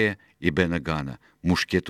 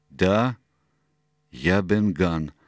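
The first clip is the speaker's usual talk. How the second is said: sheepish, embarrassed, very slow and drawn-out. Narrator reads the former pirate answering Silver, embarrassed. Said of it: "смущенно ответил бывший пират".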